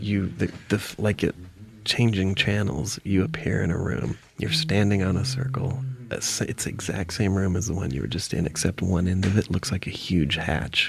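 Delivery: whispering in a low, soft, secretive murmur.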